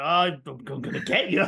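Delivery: slow, drawn-out, unconvincing tough-guy voice. Imitating a voice actor who can't do scary: Optimus failing to sound scary. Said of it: "his voice actor can't do, like, scary".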